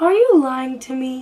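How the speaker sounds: small, eerie voice. Speaker retells the question she asked, in a little scary voice. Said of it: "she's talking in that little scary voice".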